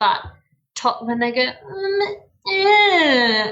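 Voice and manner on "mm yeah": very high, whiny, swooping fake toddler cry. Imitating a toddler who fake cries: imitating a toddler fake crying. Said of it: "That was a really good impression".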